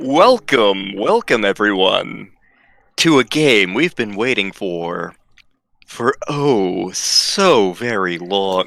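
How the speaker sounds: low, fake, seductive sexy voice. Welcoming everyone to a long-awaited game, put-on sexy voice. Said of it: "Why am I doing the sexy voice".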